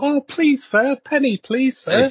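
squeaky, very high, begging urchin voice. Describing a supermarket's imagined value section, the speaker voices the urchins in the corner: begging urchin voice. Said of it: "little urchins in the corner covered in coal going".

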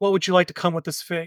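ordinary talk, nothing marked

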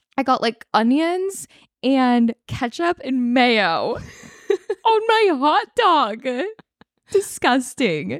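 talking through laughter. Telling another speaker about eating a street hot dog, laughing while talking. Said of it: "we are crying laughing right now".

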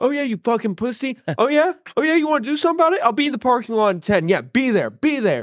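very high, shrill, screaming, taunting delivery. Retelling how Shane screamed at a man from a Toyota dealership by phone, imitating Shane screaming. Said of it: "and just start screaming at him".

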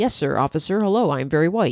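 polite, deferential, proper-sounding courteous tone. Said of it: "he's like".

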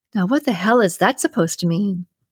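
ordinary delivery

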